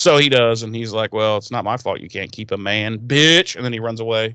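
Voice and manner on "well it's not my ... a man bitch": play-acted hurt, snide, nasty, defensive tone. Retelling a character's comeback after hurt feelings: imitating a defensive, nasty jab. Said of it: "gets his feelings hurt and gets defensive".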